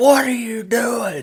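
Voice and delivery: very high, shrill yell. Retelling being caught drinking water by Dad: imitating Dad yelling. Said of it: "he yelled, he's like".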